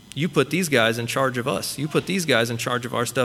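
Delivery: ordinary talk, nothing marked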